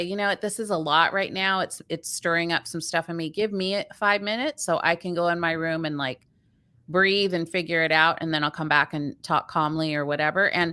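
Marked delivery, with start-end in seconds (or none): none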